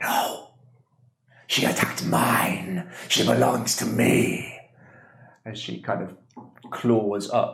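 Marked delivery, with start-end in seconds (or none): 0.0-4.6 storybook-style hag-like witch voice. Voicing a witch claiming a soul: witch voice. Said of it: "As the witch or the hag".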